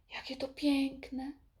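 hushed, soft, high delighted sigh. The queen, told by her page about the painted meadow, responds: sighing with delight. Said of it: "westchnęła z zachwytem".

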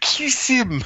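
put-on shrill German accent, pitched way up, yelling. Retelling how he yelled this over and over at a couple, imitating a shouted German accent. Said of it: "with his German accent".

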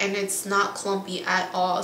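ordinary talk, nothing marked

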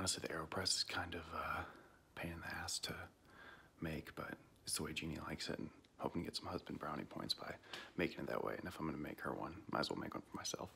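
quiet whisper.

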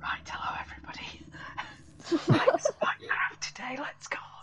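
mock sleep-deprived voice. Showing how they sound at 11 at night on Shebby's streams, imitating sleep-deprived self. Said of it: "Sleep deprived [name]".

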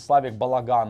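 ordinary talk, nothing marked

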